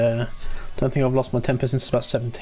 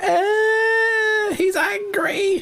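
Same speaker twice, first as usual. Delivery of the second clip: very high, squeaky, whispered mock voice. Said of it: "They're like".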